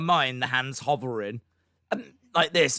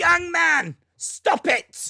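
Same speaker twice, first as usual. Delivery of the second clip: jokey, playful yell, very high, slow, drawn out; 4 dB louder than usual. Hearing a kid revving a motorcycle, shouting out the window, playful yell. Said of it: "you need to yell out the window?".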